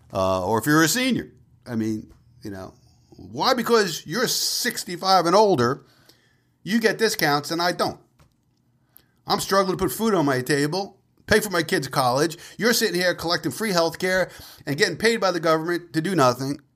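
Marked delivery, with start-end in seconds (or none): 3.1-16.6 fake, sarcastic, resentful grumbling rant, put-upon tone. Kidding around about discounts for seniors: mock sarcastic complaint. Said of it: "kinda being sarcastic here".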